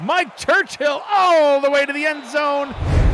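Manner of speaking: high, loud, excited call.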